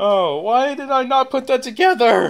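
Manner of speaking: very high, loud, cracking voice. Talking about the Sonic movies, the speaker exclaims to themselves, voice cracking. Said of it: "Sorry for that voice crack".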